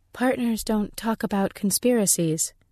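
level, even delivery. A truth reader answers a question about what her partner said, evenly. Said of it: "she said evenly".

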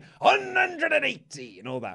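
put-on gruff voice. Speaker imitating someone calling out high scores, imitating someone's gruff voice. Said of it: "like really gruff voice".

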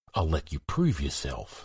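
swooping hiss, very close against the ear. Emod speaks to the boy Werting sitting beside him; hissed into his ear. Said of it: "he hissed into Werting's ear".

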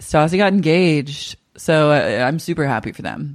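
flat delivery with zero emotion. Retelling how Dana broke some news to another person, imitating Dana's emotionless delivery. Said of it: "with zero emotion going like".

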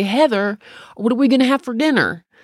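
broad put-on Southern accent. Quoting how a man she describes would speak to her, in a really southern accent. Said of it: "He just had this really Southern accent, just like this".

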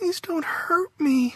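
put-on very high-pitched, whiny little-girl voice. A woman cries out in her sleep during a nightmare: whining little-girl voice. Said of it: "In a little girl voice, she whined".

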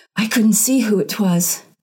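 voice gripped with horror, appalled. Narrator reading Cordelia's reply to her mistress, horror-stricken. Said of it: "she added in a horror-stricken voice".

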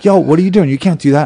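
mock high shouting. Retelling yelling at a cop who grabbed his phone, retelling yelling at a cop. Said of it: "started yelling at him".

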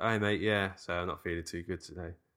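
soft, faked, weary, sickly tired voice. Asked what voice they use calling in sick, showing a put-on tired voice. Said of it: "I do kind of like tired voice".

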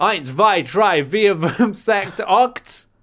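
shouting in German. Opening a show episode, counting off at a fellow host, shouting German numbers. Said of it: "why are you just shouting German numbers at me?".

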